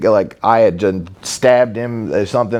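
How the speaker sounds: ordinary talk, nothing marked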